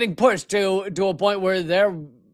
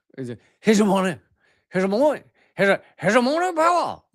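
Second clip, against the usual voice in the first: bad mock French accent, slower. Mimicking how he said a word, in a bad mock French accent. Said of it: "that was not a French accent at all".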